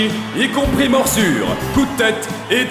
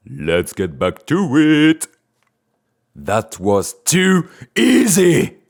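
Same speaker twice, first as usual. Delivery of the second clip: menacing taunting killer voice, lower-pitched; 5 semitones lower than usual.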